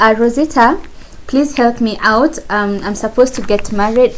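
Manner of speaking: ordinary talk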